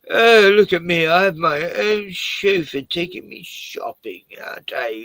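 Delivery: put-on posh, grand upper-class aristocrat voice, high and loud. Joking about wearing a tuxedo with a chauffeur: pretending to be an aristocrat. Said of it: "make out I'm a aristocrat".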